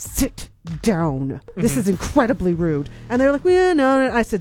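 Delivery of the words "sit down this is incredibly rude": through clenched teeth, lower, slower. Speaker retells confronting a group in a restaurant, retelling words said through teeth. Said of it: "I said through my teeth".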